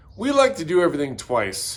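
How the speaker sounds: normal talking voice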